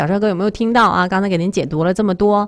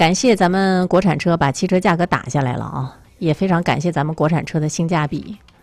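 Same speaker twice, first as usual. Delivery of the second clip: plain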